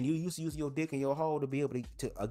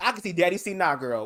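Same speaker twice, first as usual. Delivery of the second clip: plain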